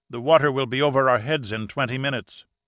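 usual speaking voice

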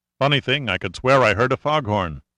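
ordinary delivery, nothing marked

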